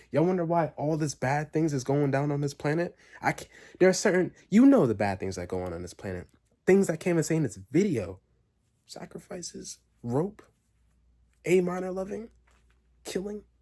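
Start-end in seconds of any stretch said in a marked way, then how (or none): 8.8-13.4 slow, hushed half-whisper, one word at a time. A speaker in a YouTube video lists things too bad to say; half-whispering. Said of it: "I'm whispering it".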